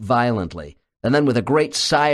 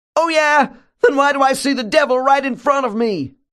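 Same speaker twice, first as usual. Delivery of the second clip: shrill, very high-pitched cutting voice; 4 dB louder than usual. The subject cuts in on the doctor's reassurance, shrill voice. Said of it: "cuts in with a shrill tone of voice".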